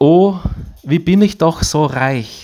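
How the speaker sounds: put-on high, pleading voice like a small child, little girl.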